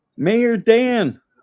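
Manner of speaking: high-pitched Appalachian accent with twang.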